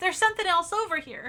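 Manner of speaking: very high, loud character voice. Repeating the previous line, this time in the Winnie voice. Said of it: "I'll say it in my Winnie voice".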